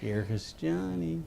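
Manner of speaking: rough, creaky character voice. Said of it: "a Jack Nicholson smile like".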